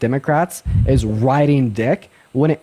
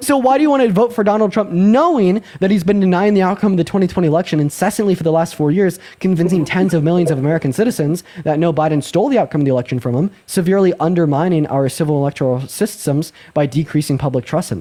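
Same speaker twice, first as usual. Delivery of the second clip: dense, relentless, nonstop run-on delivery; 3 semitones higher than usual. Asking another speaker a long question about the election: speaking way too fast. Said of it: "you spoke way too fast for me".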